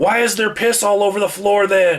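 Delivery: very high, shrill, loud yell. Retelling what the speaker yelled back at a patient: retelling own yell. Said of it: "I yelled back at him".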